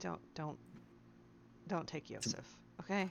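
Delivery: very quiet, whispered aside. Quietly telling the hobgoblin in character not to take someone: quietly telling in character. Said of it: "I'm gonna quietly tell our".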